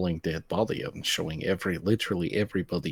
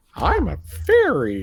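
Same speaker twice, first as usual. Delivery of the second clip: shrill, very high, very loud teasing mocking parody; 10 semitones higher, 10 dB louder than usual. Mimicking another speaker, who then objects, mocking imitation of someone. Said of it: "I don't sound like that".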